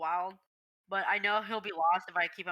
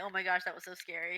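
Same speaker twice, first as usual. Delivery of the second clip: mock pet-like crying voice; 3 dB quieter than usual. Retelling how the pet runs over after the chickens: imitating pet crying. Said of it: "he comes running over crying, like".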